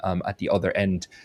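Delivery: ordinary talk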